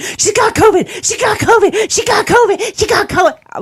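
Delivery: very high, utterly panicked, looping repetition. Patient retells hearing a nurse in the hall; imitating a nurse's utter panic. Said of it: "Like in an utter panic".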